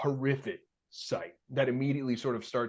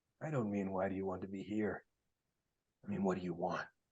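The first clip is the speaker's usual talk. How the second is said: demon character voice, lower and quieter; 3 semitones lower, 7 dB quieter than usual. Voicing a demon who questions a cleric in a bar: demon character voice. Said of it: "he goes".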